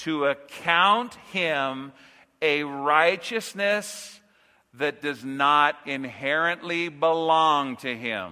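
measured, slow, deliberate, word-by-word delivery. Saying a mouthful so listeners get it, said slowly. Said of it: "I'm going to say it slowly".

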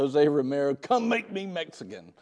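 mock assertive tone. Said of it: "I can tell she said it with that voice".

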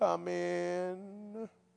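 mock mournful, soft, sad, plaintive. Retelling knocking on a woman's door with the assistant pastor, imitating a sad, plaintive voice. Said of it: "Sad, plaintive voice".

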